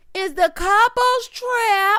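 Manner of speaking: high, slow mock hollering.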